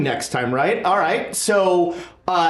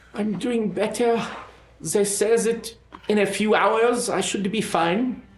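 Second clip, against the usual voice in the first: weak, feeble voice; 3 semitones higher, 3 dB quieter than usual. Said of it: "Henri kind of weakly goes".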